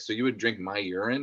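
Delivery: normal talking voice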